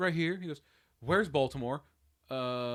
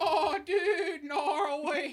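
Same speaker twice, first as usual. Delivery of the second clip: very high, squeaky cartoon-character dude voice; 13 semitones higher, 4 dB quieter than usual. Comparing someone's laugh to a guy from SpongeBob: imitating a SpongeBob character. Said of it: "the guy that's like".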